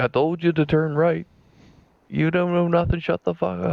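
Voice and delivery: put-on, very high, shrill yell. Recalling his older brother yelling at him from shotgun, imitating brother yelling. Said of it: "I could still hear him yelling at me".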